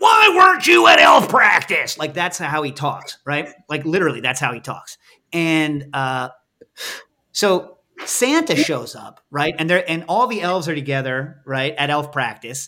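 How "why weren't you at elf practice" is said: gruff, high-pitched mean yell. Describing a mean character from a christmas show asking about elf practice: imitating a very gruff voice. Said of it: "he has this very very gruff. Voice".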